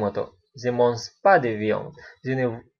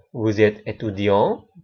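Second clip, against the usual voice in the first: pitch climbs at end of étudiant; 3 semitones lower than usual. Making a French question by intonation alone: rising pitch on étudiant. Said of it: "Dengan menaikkan intonasi".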